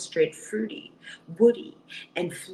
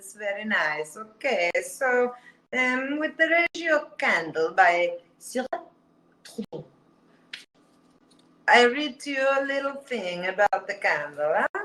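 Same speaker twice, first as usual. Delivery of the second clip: fake Italian accent throughout; 3 semitones higher than usual. Reviewing a French candle, switching to talk in a fake Italian accent. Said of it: "I talk to you now in an Italian accent".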